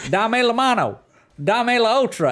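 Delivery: put-on Southern accent, very high and loud. Retelling what a texan boy said to his adopted dog, southern accent. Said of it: "kind of like southern accent".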